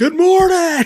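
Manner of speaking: mock, very high, very loud voice. Speaker retells greeting from the back deck in the morning, really loud good morning. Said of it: "like really loud".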